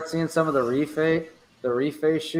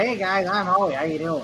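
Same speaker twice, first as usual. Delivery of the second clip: put-on nerdy Midwestern accent, much higher pitch; 4 semitones higher than usual. Speaker mimics how a poster sounds in real life, imitating Howie's Midwestern accent. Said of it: "like a nerdy Midwestern guy".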